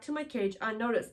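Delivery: ordinary delivery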